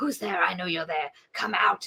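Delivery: dark, possessed-sounding voice. Retelling a story scene where the aunt speaks in a voice: imitating a possessed demon voice. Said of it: "the demon voice is like".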